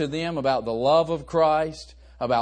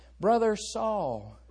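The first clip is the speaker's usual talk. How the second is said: hushed, timid, pitched-up voice, one word stretched out; 5 semitones higher, 4 dB quieter than usual. Retelling how Ananias greets Saul on entering: Ananias speaking softly and timidly. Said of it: "he enters in so softly".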